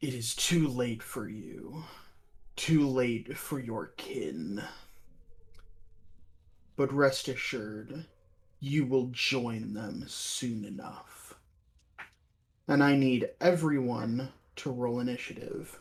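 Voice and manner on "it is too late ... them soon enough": very deep, raspy, hushed monster voice. A game master voices a creature turning to the party, in a very deep, raspy creature voice. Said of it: "in a very deep, uh, a very deep, raspy voice says".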